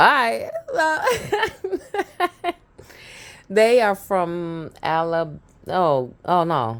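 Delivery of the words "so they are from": high, slow words spoken through laughter. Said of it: "I'm laughing already".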